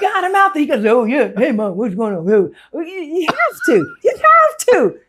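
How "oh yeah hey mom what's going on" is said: put-on kid voice, played for comedy. Acting out an imagined kid who talks like Bernie Mac. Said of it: "a little dark-skinned kid who talks like Bernie Mac".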